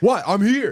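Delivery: very high, confrontational, spoiling for a fight. Retelling how the woman burst outside looking for a fight: imitating a woman ready to fight. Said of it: "to be like".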